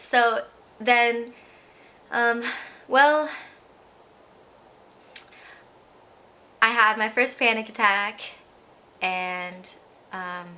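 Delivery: emotional, choked-up voice catching. Speaker starting to recount their first panic attack, choking up with emotion. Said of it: "sorry, I'm getting emotional already".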